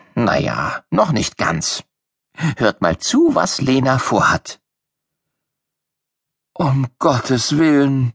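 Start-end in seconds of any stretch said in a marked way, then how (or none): 6.6-8.2 sleepy groan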